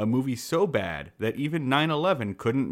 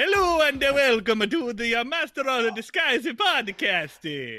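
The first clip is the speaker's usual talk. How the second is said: very high, fake, bad Italian accent; 12 semitones higher, 4 dB louder than usual. Opening the Master of the Disguise podcast in a bad Italian accent. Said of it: "the bad Italian accent".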